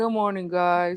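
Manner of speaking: mock sleepy, groggy, unhappy just-woke-up voice. Teasing the listener about how they greeted everyone, with a mock sleepy, unhappy greeting. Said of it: "you didn't sound very happy. Or good morning, guys. Like you just barely woke up".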